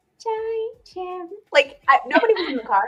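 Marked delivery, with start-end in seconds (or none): 0.2-1.3 very high-pitched voice, giggling throughout. Retelling saying a name alone in the car: imitating own giggly voice. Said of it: "giggled and said".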